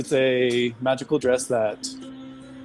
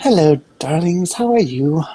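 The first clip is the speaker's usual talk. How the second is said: put-on elderly dwarf shopkeeper woman voice; 5 semitones higher, 4 dB louder than usual. Voicing a dwarvish shopkeeper greeting customers: older dwarvish woman voice. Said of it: "you see this kind of older dwarvish woman".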